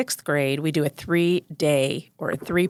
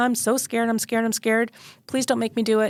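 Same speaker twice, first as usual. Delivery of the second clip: mock tearful, frightened child's voice, high and crying; 5 semitones higher than usual. Retelling a five-year-old's plea before a flu shot, imitating a crying scared child. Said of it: "and she's crying".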